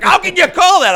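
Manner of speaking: loud, high-pitched yell. Retelling what a man yelled at the speaker from the stands, imitating someone yelling. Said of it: "he's yelling at me from the stands".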